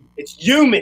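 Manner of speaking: put-on Delaware County accent. Retelling a line from an Aunt Mary Pat skit: imitating Aunt Mary Pat's Delco accent. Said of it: "Aunt Mary Pat skit ... she was like".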